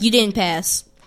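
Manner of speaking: mock loud announcement voice. Retelling an old math teacher addressing a student, imitating teacher saying it loudly. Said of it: "she'd say it like as loud as possible".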